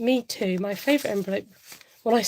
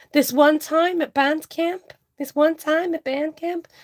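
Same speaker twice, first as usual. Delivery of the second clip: higher-pitched, bad put-on American accent, not landing; 7 semitones higher, 3 dB louder than usual. Naming cash envelopes, the speaker quotes a line: attempted american accent. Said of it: "can't really do my American accent".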